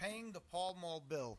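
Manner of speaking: New York Bronx accent. Reading a piece's title aloud to the group, in a bronx accent. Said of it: "Excuse my Bronx accent on that one".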